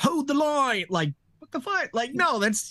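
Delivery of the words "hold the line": put-on British-accented voice. Retelling how a character sounded in a promo: Aaron sounding British. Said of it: "it sounded so British".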